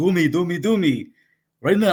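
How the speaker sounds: high, loud Israeli cantor voice. Retelling what the Israeli cantor said at a gas station: imitating the Israeli cantor. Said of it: "He's this Israeli guy. He's like".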